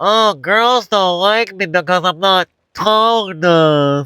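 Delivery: stupid, silly, high mocking voice. Speaker demonstrates repeating a limiting belief out loud: stupid mocking voice. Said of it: "say it in a stupid fucking voice".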